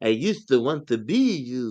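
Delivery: put-on very slow vampire accent, every word drawn out. Retelling what she said, the speaker does her Dracula accent. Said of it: "She sounded like Dracula".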